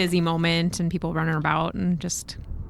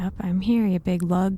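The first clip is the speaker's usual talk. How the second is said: hushed whisper under the breath. Character spotting a crewmate who keeps turning away: whispering under breath. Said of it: "is what Aaron whispers under their breath".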